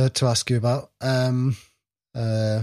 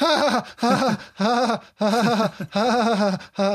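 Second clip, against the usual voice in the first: high, loud fake laugh. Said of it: "laughing and going".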